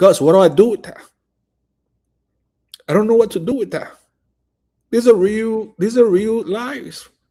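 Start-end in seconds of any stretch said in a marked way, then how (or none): 0.0-3.9 mock crying, tearful, pleading voice. Retelling what a pastor said while crying: imitating someone crying. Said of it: "And the pastor was crying".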